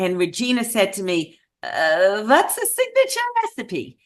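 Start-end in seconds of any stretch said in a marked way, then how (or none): 2.2-3.9 bad, high, swooping put-on Eastern European accent. Retelling a conversation, quoting Regina's question in a bad Eastern European accent. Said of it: "I do the absolute worst Eastern European accent on the planet".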